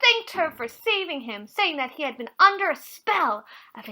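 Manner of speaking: ordinary delivery, nothing marked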